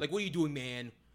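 mock condescending tone. Listing condescending phrases, the speaker acts out how people say it, mock-condescending. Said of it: "use man in a condescending way".

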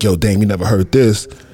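ordinary delivery

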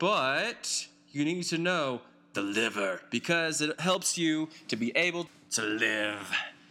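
corny hero voice, slowed down. Podcast host covering the liver, in a stupid Batman voice. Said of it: "why do I keep saying it in that stupid Batman voice".

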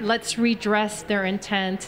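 plain

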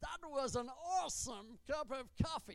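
clumsy, put-on American accent. Speaking about the word awesome, slips into a bad American accent. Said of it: "my bad American accent".

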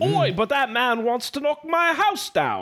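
fake British accent, drawn out, sing-song and high-pitched. Reading the player's exclaimed line in an interactive story, put-on british accent. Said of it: "now I gotta do the accent".

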